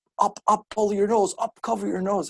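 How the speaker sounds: put-on barking delivery, pitched way up. Retelling a cop ordering the speaker to cover their nose: imitating barked orders. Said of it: "barking these orders".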